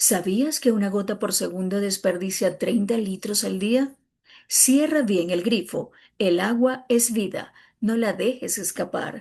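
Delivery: persuasive public service spokesperson commercial tone. Performing a publicity spot meant to persuade, persuasive ad tone. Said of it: "En el spot publicitario yo te voy a persuadir".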